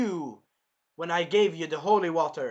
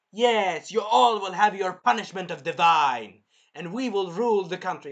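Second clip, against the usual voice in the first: put-on villainous, evil priest voice. Retelling what a priest said in a scene, in an evil priest voice. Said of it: "I tried to do evil priest voice".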